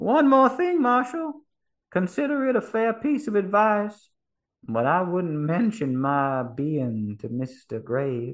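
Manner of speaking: muffled, covered-sounding voice. Narrating the scene, a man lying in a cell speaks to the marshal, muffled voice. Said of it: "his voice muffled by the hat".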